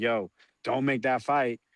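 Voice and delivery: reenacted pleading voice. Recalling arguing against a planned fight, the speaker replays his words: retelling a past plea. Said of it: "and I was pleading".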